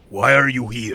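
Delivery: halting, broken Common. Voicing a scout who confronts the party: speaking broken Common. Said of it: "in common that's broken".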